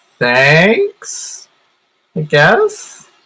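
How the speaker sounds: unsure, hesitant delivery. A player's character thanks a tree after transforming back, unsure. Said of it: "like unsure".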